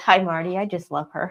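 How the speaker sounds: ordinary talk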